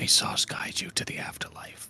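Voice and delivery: hushed whisper, close to the ear. Narrating a game scene, the Goblin whispers in another character's ear, whispering. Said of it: "He whispers down in his ear".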